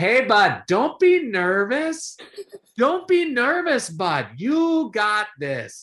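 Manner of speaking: very high, very slow, drawn-out Canadian hockey-player voice. Retelling what a man said passing by during his workout, in a canadian hockey accent. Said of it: "he talks with the Canadian voice, but also the just sort of the hockey accent".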